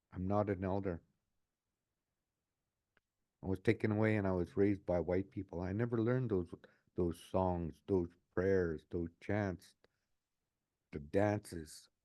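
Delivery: ordinary delivery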